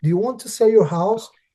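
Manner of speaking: very broken English. Retelling door knocking to sell houses: imitating own past broken english. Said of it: "have that extremely broken English".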